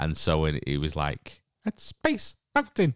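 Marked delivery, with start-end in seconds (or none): 1.6-2.9 very high, janky, ridiculous mouse voice. Recalling an understudy voicing the mouse, the speaker imitates him in a ridiculous mouse voice. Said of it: "But it just sounded like that".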